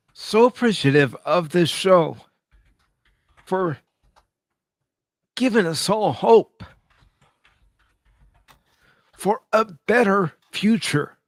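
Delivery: crying while talking. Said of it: "Are you crying?".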